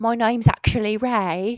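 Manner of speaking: put-on London Cockney accent. Imagining a character's next line in a movie, in cockney accent. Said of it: "you did a Cockney accent".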